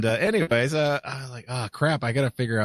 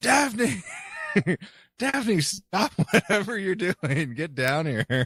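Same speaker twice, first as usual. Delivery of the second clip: put-on high, hollered yell; 8 semitones higher than usual. Retelling calling a child down from the basement: imitating someone screaming upstairs. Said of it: "I'm screaming upstairs".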